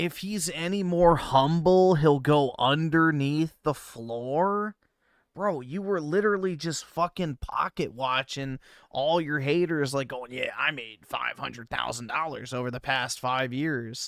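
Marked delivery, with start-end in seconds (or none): 10.3-14.1 mock boastful, flaunting bragging voice. Mocking the other speaker's money flex: imitating someone bragging about money. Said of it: "literally flaunting it".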